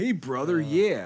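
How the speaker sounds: put-on mid-Atlantic accent, mid-Atlantic vowels throughout. Mocking another speaker's way of talking: imitating a mid-atlantic accent. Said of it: "that's not what I sound like".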